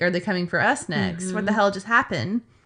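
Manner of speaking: ordinary talk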